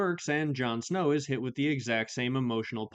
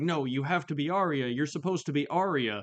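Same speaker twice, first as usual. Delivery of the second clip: mock desperate, frantic, urgent and insistent; 3 semitones higher than usual. Imagining a scene where a character screams at the fake Arya: imitating Theon screaming. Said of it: "screaming at her".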